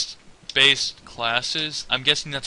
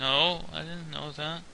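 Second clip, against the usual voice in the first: smallest, very soft, hushed, innocent little voice; 12 dB quieter than usual. Imitating Tiber losing an argument: smallest, most innocent voice. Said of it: "the smallest, like, most innocent voice ever".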